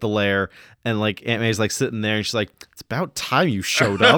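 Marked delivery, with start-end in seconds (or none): 2.7-4.2 cheeky, sassy, raised and pitched up. Quoting Aunt May from the movie's lair scene: sassy Aunt May voice. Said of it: "She's so sassy".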